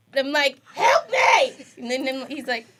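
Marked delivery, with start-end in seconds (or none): 0.7-1.6 put-on very high, shrill, loud scream. Retelling screaming at Zach for help in the dark, retelling her own scream. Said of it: "and I'm screaming at Zach".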